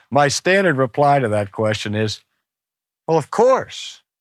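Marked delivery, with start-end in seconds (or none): 3.0-3.9 playful, mischievous tone with lifted pitch. Giving a standard reply to a question about the Bible: mischievous smile in voice. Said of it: "You can hear the mischievous smile in his voice".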